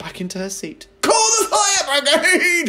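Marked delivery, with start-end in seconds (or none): 1.0-2.7 sudden, very loud, very high, shrill shout. A grandmother, just given strong medicine, suddenly shouts from her chair. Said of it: "she shouted suddenly".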